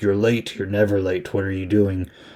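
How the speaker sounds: plain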